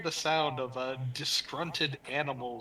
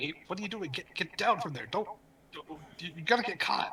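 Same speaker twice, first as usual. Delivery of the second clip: high, crowd-like commotion of animal calls; 5 semitones higher than usual. Voicing animals in a commotion as the game master: animals shouting. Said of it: "a lot of them shouting, saying".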